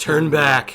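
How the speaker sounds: very loud, menacing, intimidating voice. Casting a spell to frighten an approaching creature: intimidating command.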